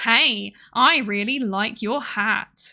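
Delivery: heavy southeastern English accent. Showing how a compliment on a hat sounds: heavy Southeast English accent. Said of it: "heavy English, like, Southeast English accent comes up to you".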